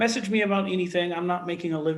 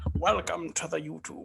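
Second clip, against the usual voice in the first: weird, rough, creaky, raspy mocking voice; 4 dB quieter than usual. YouTuber showing off a mockery intro voice, a weird young Sean Connery voice. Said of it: "some weird young Sean Connery almost".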